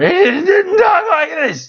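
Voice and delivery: put-on comic voice, pitched very high and loud. Describing a film cameo, then imitating Bobcat Goldthwait voice. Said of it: "his Bobcat voice".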